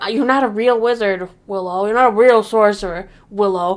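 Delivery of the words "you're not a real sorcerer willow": ordinary talk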